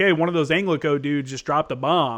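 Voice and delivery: ordinary talk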